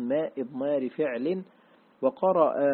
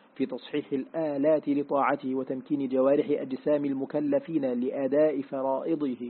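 ordinary talk, nothing marked

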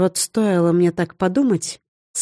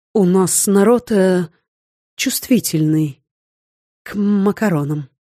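confused, bewildered mumble, lost and unsure. Narrator reading Gvent's line after his companion faints, a confused mumble. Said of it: "растерянно промямлил".

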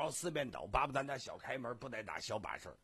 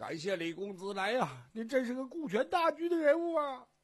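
very high, loud, sobbing, tearful voice; 12 semitones higher, 8 dB louder than usual. A character thanks someone through tears, crying while thanking. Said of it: "哭还没忘了感谢李白呢".

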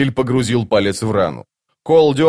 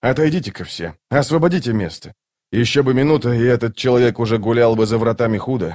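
ordinary delivery

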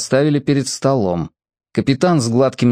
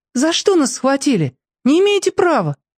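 thin, very high, unafraid, fearless voice; 13 semitones higher than usual. Detained with others, she protests to the sergeant and captain, thin but fearless. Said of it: "тонко, но безбоязненно сказала".

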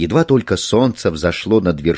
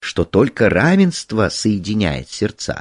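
plain

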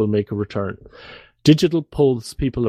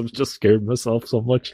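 usual speaking voice

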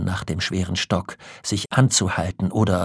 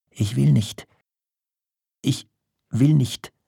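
clumsy, stumbling, high, halting stammer; 6 semitones higher than usual. Pressed by a woman to speak, a man finally answers, stammering awkwardly. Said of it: "stammelte er endlich unbeholfen".

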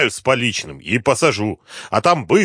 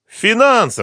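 shrill, very high-pitched yell; 11 semitones higher, 3 dB louder than usual. Questioned about the money, the sleepwalker shouts back. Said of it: "закричал лунатик".

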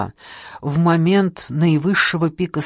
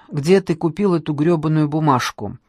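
usual speaking voice

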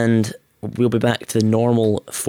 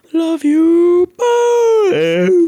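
very high, loud, stretched out like a yawn; 7 dB louder than usual. Saying a sign-off asked to be extra long, sounds like yawning. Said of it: "Sounds like you're yawning".

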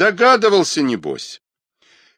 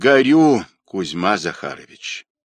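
usual speaking voice

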